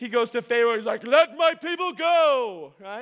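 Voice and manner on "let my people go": booming, very slow, loud delivery with "go" stretched out. Retelling how Moses speaks to Pharaoh in the movie: Charlton Heston voice. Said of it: "that's what we think happened 'cause of Charlton Heston".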